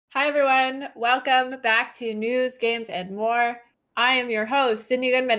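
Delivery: talking like a robot, robotic voice. Host opening the show News, Games, and More: talking like a robot. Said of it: "I don't know why I'm talking like a robot".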